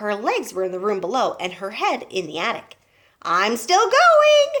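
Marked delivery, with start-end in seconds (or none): 3.2-4.6 put-on very high, shrill, screechy grandmother voice. Reading Grandma calling down from high above to George: old screechy voice. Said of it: "came the old screechy voice".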